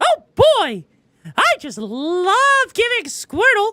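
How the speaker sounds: squeaky, high, swooping little cartoon mouse voice. Trying out character voices, the speaker hits the mouse one: cartoon mouse voice. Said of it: "I hit the mouse one".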